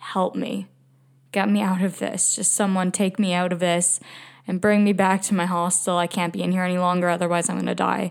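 desperate pleading cry, rushed out all at once. Retelling a brutal taxi ride, imitating own desperate plea. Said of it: "with such desperate eyes".

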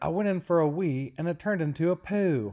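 put-on loud, high-pitched Australian accent. Retelling a moment from the show Bluey, in Bluey's Australian accent. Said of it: "so they have Australian accents".

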